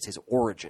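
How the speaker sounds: plain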